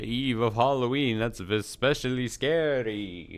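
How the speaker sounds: loud, spooky vampire voice, scary and drawn out. Opening a stream on halloween eve, doing a vampire impression. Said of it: "my best uh, vampire whatever impression".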